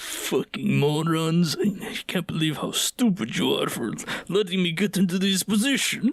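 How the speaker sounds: mock muttered grumbling under the breath. Retelling how a character grumbles while showing people the way, imitating muttered insults. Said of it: "the entire time is mumbling about how big morons they are".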